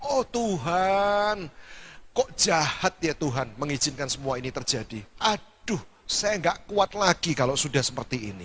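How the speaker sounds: ordinary delivery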